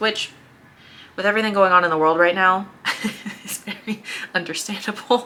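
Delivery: awkward, uncomfortable laughter running through the words. Mid-explanation, laughing out of discomfort rather than amusement. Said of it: "I'm laughing because it's uncomfortable".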